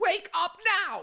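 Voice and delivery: abrupt, very high, very loud shout. Recounting being jolted awake from sleep by a voice, imitating someone yelling. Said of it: "all of a sudden someone yelled".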